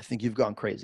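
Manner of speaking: mock calm disappointment. Retelling someone's disappointed reaction, imitating a calm, upset voice. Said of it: "he couldn't even yell".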